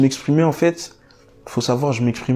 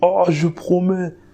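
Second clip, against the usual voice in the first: big, heavy, booming acted voice, pitched up; 7 semitones higher than usual. Retelling a promise made to god, imitating own big booming voice. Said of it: "j'avais une grosse voix".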